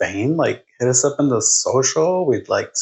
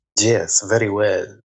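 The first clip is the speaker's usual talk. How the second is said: put-on vampire accent. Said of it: "I'm working on my Halloween accent, like a vampire".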